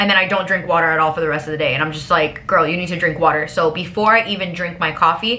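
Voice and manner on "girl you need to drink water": normal talking voice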